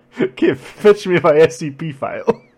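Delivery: very loud, very slow, booming, swaggering, swooping bark. Joking about not sounding like Zapp Brannigan: Zapp Brannigan voice. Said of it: "I don't wanna sound like Zach Brannigan".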